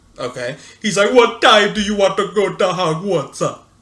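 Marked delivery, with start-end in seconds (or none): 1.1-3.4 loud, high put-on Jamaican accent. Imitating the shrunken head in Prisoner of Azkaban: put-on Jamaican accent. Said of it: "a shrunken head in it with a Jamaican accent".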